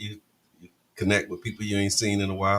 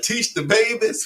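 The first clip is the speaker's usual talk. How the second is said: put-on, very high-pitched, loud holler; 13 semitones higher, 5 dB louder than usual. Retelling what someone back there keeps hollering: imitating Mister Emmett hollering. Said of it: "he's still back there hollering".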